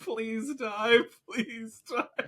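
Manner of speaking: very high, drawn-out, teary begging tone. Retelling someone stomping a pheasant that would not die: imitating someone tearing up. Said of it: "And he's tearing up".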